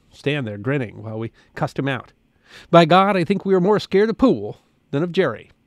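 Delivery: ordinary delivery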